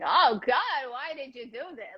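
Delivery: slow, put-on Yiddish-accented old woman's voice. Comparing impressions, the speaker does their own version in a Yiddish-style put-on voice. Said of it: "Mine is more like a Yiddish".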